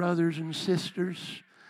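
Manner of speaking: put-on Southern drawl. Addressing brothers and sisters in a put-on southern twang. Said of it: "I'll say it with a southern twang".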